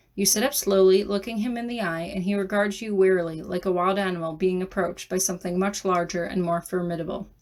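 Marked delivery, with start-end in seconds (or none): none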